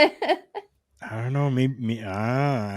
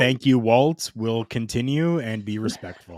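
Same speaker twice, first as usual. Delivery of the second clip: ordinary delivery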